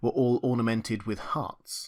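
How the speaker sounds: ordinary delivery, nothing marked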